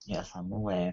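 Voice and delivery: very quiet, soft, high, sorrowful voice. Replying to another player's remark, sounding sad. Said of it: "You sounded so sad saying that".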